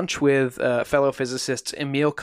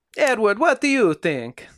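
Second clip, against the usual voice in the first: put-on Italian accent, pitched up; 8 semitones higher than usual. Retell what one man asked Teller at the table, as Fermi with an Italian accent. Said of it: "He probably had an Italian accent".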